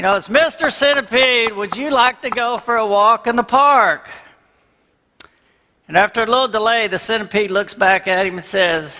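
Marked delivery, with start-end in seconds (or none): 0.1-4.1 put-on even louder, pitched-up calling out. In a joke, a man bangs on the glass to call his centipede: talking even louder. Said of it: "This time I'm going to talk even louder".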